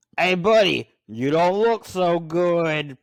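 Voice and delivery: loud put-on New York accent, "good" drawn out. Quoting a film side character supposedly from England, in a New York accent. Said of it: "talk in the like a New York accent".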